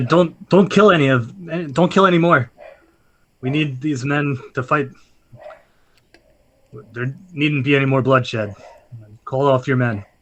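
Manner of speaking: intimidating, threatening acted tone. Speaking in character to stop an enemy's attack: intimidating in character. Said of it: "just trying to intimidate this guy".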